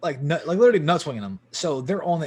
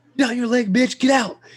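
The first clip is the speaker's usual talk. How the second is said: shrill, very high-pitched, loud scream; 9 semitones higher, 6 dB louder than usual. Retelling what was yelled at an opponent during a game: imitating someone screaming. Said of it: "we're screaming it".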